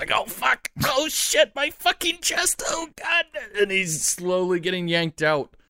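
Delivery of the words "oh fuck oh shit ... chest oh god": very high, pained shrieks of agony. Voicing a trapped character yanked out by his hands: screaming in pain. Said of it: "You can hear him just screaming".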